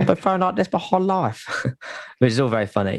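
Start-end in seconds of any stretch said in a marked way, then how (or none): 0.0-1.7 high-pitched put-on Spanish Cockney accent. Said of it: "he's got this cracking Spanish Cockney voice".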